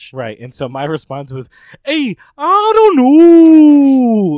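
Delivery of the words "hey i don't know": "know" stretched out in a bad New York accent.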